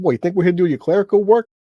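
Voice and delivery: loud, put-on New York accent. Quoting how the boss said it: put-on New York accent. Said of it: "too far into the the New York accent".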